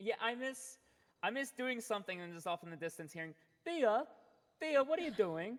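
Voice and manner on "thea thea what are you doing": very loud, calling out, put-on British accent. Recalling someone she misses calling out to her, imitating his British accent. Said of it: "his beautiful British voice".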